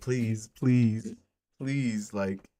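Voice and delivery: mock, begging, pleading tone. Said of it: "begging them, like".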